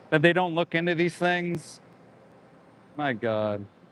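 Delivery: ordinary delivery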